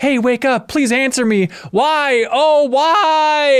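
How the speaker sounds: very high, slow, pleading anguished scream, "why" stretched. Player retells what one fairy in the game was like, imitating a fairy screaming. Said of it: "He's like screaming at the heavens".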